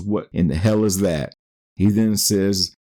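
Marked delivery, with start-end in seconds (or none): none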